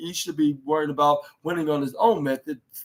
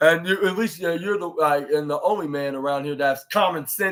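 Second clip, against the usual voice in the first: plain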